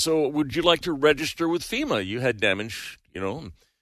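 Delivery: normal talking voice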